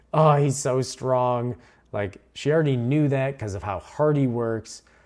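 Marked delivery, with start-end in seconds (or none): 0.1-1.5 mock tearful, sobbing crying voice, slow. Retelling a fight scene where a character cries: imitating someone crying. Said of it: "immediately starts crying, like".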